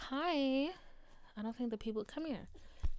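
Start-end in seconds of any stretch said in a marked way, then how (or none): 0.0-0.7 high, put-on dog voice. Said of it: "She's like".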